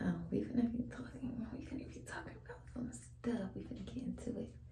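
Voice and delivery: soft whisper. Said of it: "I'm whispering 'cause my baby's asleep".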